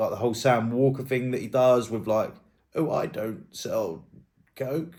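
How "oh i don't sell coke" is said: heavy put-on sarcasm, slow and swooping, barely meant. Speaker quotes a man's reply to a rumor, imitating a sarcastic tone. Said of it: "in a sarcastic tone".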